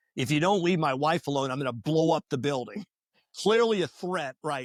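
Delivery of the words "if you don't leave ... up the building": usual speaking voice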